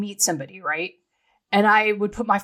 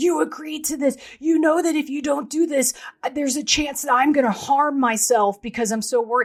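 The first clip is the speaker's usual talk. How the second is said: mock furious, high-pitched, top-of-the-lungs screaming; 6 semitones higher than usual. Recalling what he would scream at the speaker back then: retelling a furious scream. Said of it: "I mean like screaming like you've never heard before".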